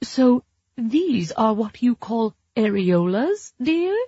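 put-on wobbly, shaky old lady voice. Reading fiction: a character squints through an invisible monocle, wobbly Mrs. Harrison voice. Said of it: "her voice wobbly as elderly tourists".

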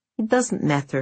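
ordinary delivery

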